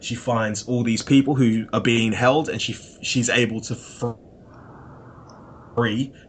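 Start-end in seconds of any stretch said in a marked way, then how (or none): 2.5-6.1 very slow, careful, word-by-word delivery. Speaker summarizing a story's plot: said very slowly. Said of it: "I had to say that really slowly".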